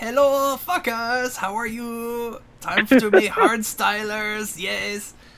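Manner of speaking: funny high, slow, drawn-out voice. Imitating a hardstyle YouTuber from Spain greeting viewers: imitating Fuckable Team's funny voice. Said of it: "his voice is so funny".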